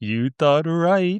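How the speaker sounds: put-on baby-talk voice. Recapping a scene where Dustin answers the nurse, Dustin in baby talk. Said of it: "baby talk".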